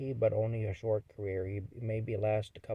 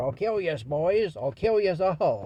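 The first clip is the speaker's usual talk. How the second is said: mocking impression, much higher pitch; 8 semitones higher, 11 dB louder than usual. Recalling how the boys mocked a man's threat, with a mocking imitation of his threat. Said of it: "We used to imitate that".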